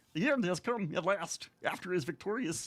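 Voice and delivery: frog puppet voice. Demonstrating reading a book aloud in a Kermit the Frog impression. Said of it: "in like a very good Kermit the Frog impression".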